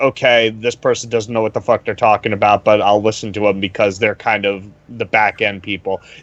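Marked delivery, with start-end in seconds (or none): none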